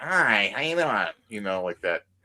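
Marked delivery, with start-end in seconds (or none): 0.0-1.1 put-on nasal Michigan accent. Showing how people from Michigan sound: imitating a nasal Michigan accent. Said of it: "a real, like, like, nasally".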